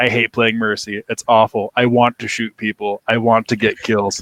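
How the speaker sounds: put-on deadpan delivery. Retelling a player's reply to fans at a signing: imitating Neptuno deadpan. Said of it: "Neptuno just looked at us deadpan".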